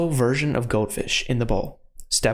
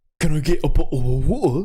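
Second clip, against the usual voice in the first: best-effort, put-on British accent; 3 semitones higher, 4 dB louder than usual. Showing chat a best-effort British impression: British accent impression. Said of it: "I'm gonna do the best British impression that I got".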